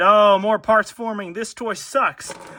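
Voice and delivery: put-on sarcastic grumble. Transforming a toy figure, pretending to complain about it: put-on sarcastic complaining. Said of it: "I'm being sarcastic".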